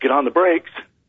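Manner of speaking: mock, contained, urgent yelling call. Retelling a cockpit landing, the lieutenant's command: imitating someone yelling. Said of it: "Lieutenant Duffy yells".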